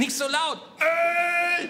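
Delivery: blurted out, high and loud.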